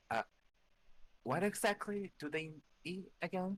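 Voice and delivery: hushed voice. Asking the gift-giver a question in character, whispering.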